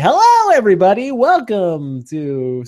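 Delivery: loud, swooping, put-on on-air radio announcer voice. Doing the usual opening greeting just a little, radio announcer voice. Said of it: "I wanted to come in with my radio voice".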